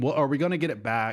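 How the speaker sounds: ordinary talk, nothing marked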